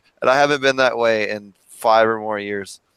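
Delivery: ordinary delivery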